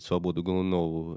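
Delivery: ordinary delivery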